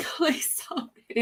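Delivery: mock crying, high, tearful, fighting back tears. Retelling asking for help while sick: retelling own tearful plea. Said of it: "I was crying, but trying not to cry".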